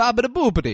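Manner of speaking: loud, over-the-top, exaggerated fake Italian babble. Showing the other speaker how to do an italian voice: exaggerated italian accent. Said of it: "You gotta go Italian".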